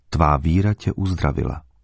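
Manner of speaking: plain reading voice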